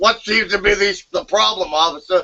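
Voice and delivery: put-on very high, very loud voice, mouth crammed full. Retelling answering a cop with drugs in the mouth: imitating talking with a full mouth. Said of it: "a jaw full of chaw".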